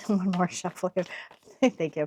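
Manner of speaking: soft, hushed, giggling while speaking. Tarot reader shuffling the deck during a reading, laughing while talking. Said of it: "Sorry, I'm laughing".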